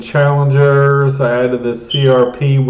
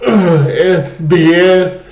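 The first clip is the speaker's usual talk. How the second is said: yawning, much higher; 5 semitones higher than usual. Discussing dividend-paying stocks, reading out a company's ticker while yawning. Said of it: "Sorry, I'm just yawning".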